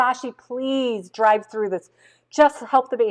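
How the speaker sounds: put-on tearful, crying voice, speaking through tears. Retelling begging a guide to drive in: retelling a crying plea. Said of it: "I was crying and crying and crying and saying".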